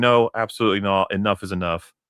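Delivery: ordinary talk, nothing marked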